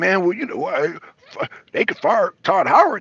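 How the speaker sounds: stunned, floored, halting, stumbling disbelief. Speaker quoting back what someone said in a past conversation, imitating someone stunned. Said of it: "you sound really stunned about that".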